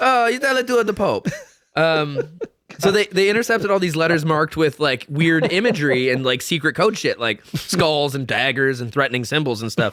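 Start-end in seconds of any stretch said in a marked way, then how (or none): 0.0-1.3 put-on very high-pitched Italian man voice with Italian accent. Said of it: "That's perfect Italian guy".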